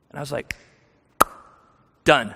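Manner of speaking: plain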